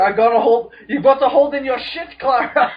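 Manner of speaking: high, loud, strained, urgent delivery. Joking about an episode where Capaldi holds it in: imitating Capaldi straining. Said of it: "He's holding it in for, like, five days straight".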